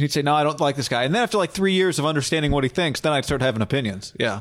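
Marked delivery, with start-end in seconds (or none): none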